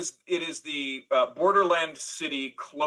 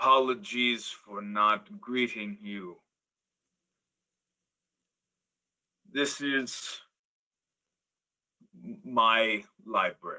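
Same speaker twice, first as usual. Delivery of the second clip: aged minotaur voice, low and very slow; 5 semitones lower, 4 dB quieter than usual. Voicing an old minotaur greeting visitors to his library: old minotaur voice. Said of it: "you can see this minotaur is old".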